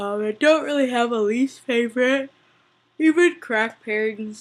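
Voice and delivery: words pulled out of shape through a loud yawn. Answering a question about a least favorite pairing, yawning while talking. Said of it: "I'm yawning, sorry".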